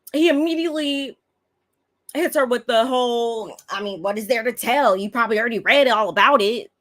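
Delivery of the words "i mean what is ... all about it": put-on brushing-off voice, pitched higher. Retelling how Juan brushed off a question: imitating Juan. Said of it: "the classic Juan that he is".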